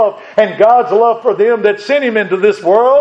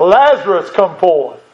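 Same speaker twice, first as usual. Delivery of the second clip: mock mighty, powerful, commanding voice, crying out; 3 semitones lower than usual. Speaker retells Him calling Lazarus out of the tomb: acting out a powerful voice. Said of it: "He declared with a powerful voice".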